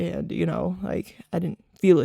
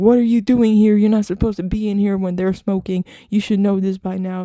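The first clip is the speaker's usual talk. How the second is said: very loud, fast, screamed delivery; 8 dB louder than usual. A speaker retells their grandmother coming in on them; retelling a grandmother screaming. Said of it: "my grandmother comes in yelling, screaming at me".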